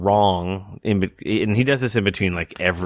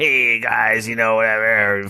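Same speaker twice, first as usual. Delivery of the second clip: bad funny put-on creepy disco radio DJ accent; 3 semitones higher than usual. Describing a DJ who dresses up on stage, doing his bad funny accent. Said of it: "funny accent".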